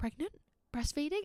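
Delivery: hushed stage whisper. Retelling what the chemist worker asked: imitating a half-whisper. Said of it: "and she started whispering".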